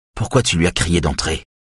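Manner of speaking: ordinary delivery, nothing marked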